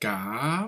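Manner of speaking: cam dips in pitch, then rises. Pronunciation lesson comparing vowel sounds: dipping then rising tone on cam. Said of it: "ça descend d'abord et ça remonte".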